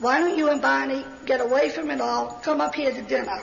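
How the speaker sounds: plain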